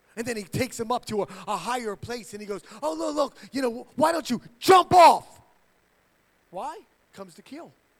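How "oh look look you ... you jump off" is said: acted, very loud, high, insistent, pushy tone.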